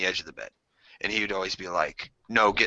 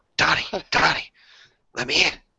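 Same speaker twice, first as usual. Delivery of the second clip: calling in a whisper, higher pitch; 7 semitones higher, 3 dB louder than usual. Retelling being woken by a brother at the window, imitating brother calling outside window. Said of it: "my brother tapping on the outside window".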